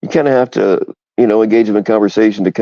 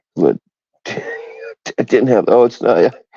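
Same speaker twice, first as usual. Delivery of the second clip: helpless, slow, high laughter breaking through words. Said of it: "I'm sorry for laughing".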